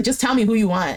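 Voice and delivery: ordinary talk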